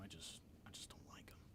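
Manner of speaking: soft, hushed whisper.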